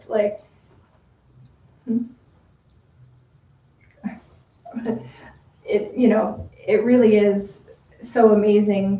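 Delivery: choked-up voice catching with feeling. Thanking the Fiends and saying how touched she is, the speaker sounds choked up. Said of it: "I'm like getting all choked up here now".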